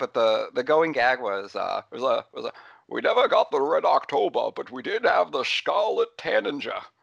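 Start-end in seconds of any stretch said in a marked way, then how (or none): 2.9-6.8 put-on overdone Scottish accent, rough and pitched up. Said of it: "definitely more Scottish than Sean ever, Connery ever really sounded".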